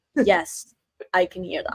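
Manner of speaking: ordinary delivery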